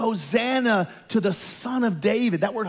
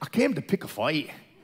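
put-on low, thick Scottish accent; 4 semitones lower than usual. Retelling a Braveheart scene where William Wallace rides out: thick Scottish accent. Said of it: "he says in his thick Scottish accent".

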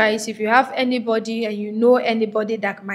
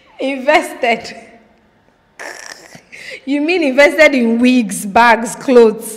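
amused voice broken by laughter through the words; 2 semitones higher, 4 dB louder than usual. Reading a letter aloud and breaking off to comment, laughing while speaking. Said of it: "Sorry, I'm laughing".

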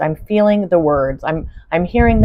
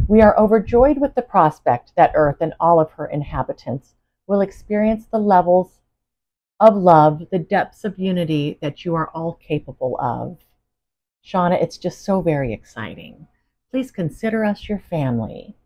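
plain

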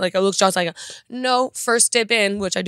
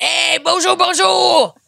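put-on Creole accent, very high and loud; 10 semitones higher, 5 dB louder than usual. Commenting on a Louisiana dish, slipping into a fake Creole accent. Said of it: "It's my Creole accent".

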